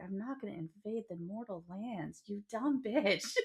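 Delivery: mock fed-up, annoyed, irritated sharp tone. Acting out a book character's retort in a discussion: imitating an annoyed character. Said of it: "he's so annoyed with her".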